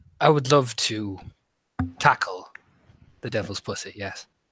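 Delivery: very low, utterly flat deadpan delivery. Answering in character an offer to help fight a demonic cat: deadpan. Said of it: "He says that as deadpan, stone-faced as possible".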